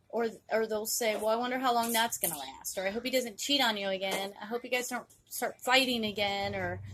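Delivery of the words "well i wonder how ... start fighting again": ordinary talk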